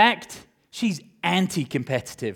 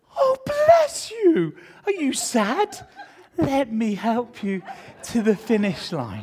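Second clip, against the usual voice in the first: put-on kindly sympathy, high, sing-song; 9 semitones higher than usual. Acting out a runner who stops to help children she has lapped; mock-sympathetic runner. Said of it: "She's lapped children and then gone".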